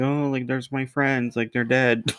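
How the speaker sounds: acted, upset, high, tearful voice crying through words. Retelling a movie scene where a character sees her dead friends: imitating someone upset and crying. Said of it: "starts getting all upset and crying".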